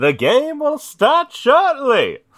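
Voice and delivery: very high, very loud booming announcer, swooping pitch. Describing how the game begins, in a game announcer voice. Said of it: "the fucking announcer voice is like".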